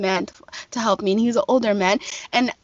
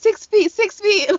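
put-on very high, drawn-out panicked outburst; 10 semitones higher, 4 dB louder than usual. Retelling how a man in a store reacted: imitating someone freaking out. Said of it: "this man literally had a freak out".

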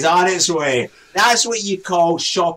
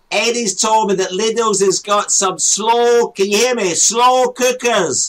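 high-pitched yelling, shouting; 5 semitones higher, 3 dB louder than usual. Show host talking to someone live on air, shouting. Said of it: "He's shouting".

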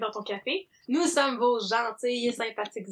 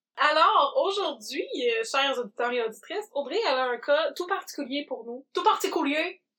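strange, put-on Italian accent; 3 semitones higher than usual. Speaking to the listeners, in a fake italian accent. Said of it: "[name] est devenue italienne".

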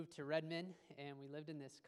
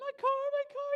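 mock very high-pitched, very loud bawling, weeping wail; 14 dB louder than usual. Retelling a woman rushing into their condo, imitating someone bawling. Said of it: "rushing in and is just bawling, weeping".

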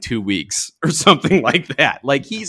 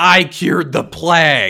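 very slow, drawn-out, unhinged, crazed shouting; 4 semitones higher than usual. Picturing him at the end, yelling at somebody: imitating a crazed yell. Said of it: "he's just yelling at somebody like".

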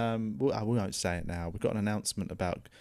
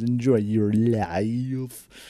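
robot voice, louder and slower; 8 dB louder than usual. Signing off a podcast, repeating the other speaker's sign-off in a robot voice. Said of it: "It was a well timed robot voice".

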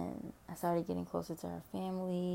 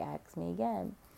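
plain

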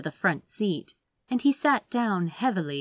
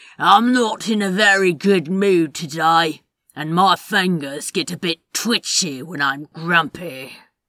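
sneering, rough and loud; 9 dB louder than usual. Reading a story, the gunman in the trench coat warns Mr. Wilder: rough sneering voice. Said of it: "It was the pale-haired man in the trench coat, the one with the gun, / a rough voice said in his ear. He turned his head very slightly. It was the pale-haired man in the trench coat, the one with the".

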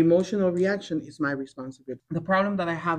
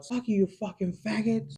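sudden acted outburst, shouted high-pitched; 5 semitones higher, 3 dB quieter than usual. Retelling what a client shouted at work: imitating someone shouting. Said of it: "And he shouts".

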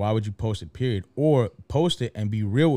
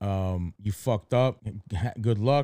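usual speaking voice

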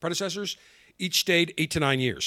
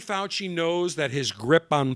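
normal talking voice

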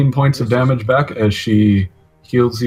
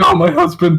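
voicing an orc woman; 8 semitones higher than usual. Voicing Zanasha as she rushes to heal a fallen husband: voicing Zanasha the orc. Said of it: "She's like".

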